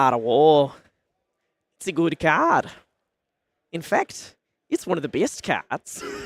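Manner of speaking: put-on New Zealand accent, tired and exasperated. Retelling how James answered when handed an Art of War card, New Zealand accent. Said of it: "your attempt at the New Zealand accent".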